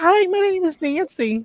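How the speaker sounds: acted bubbly, perky, very slow and drawn-out. Retelling how a woman in a clip introduced herself: imitating a perky greeting. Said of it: "she was all perky and everything".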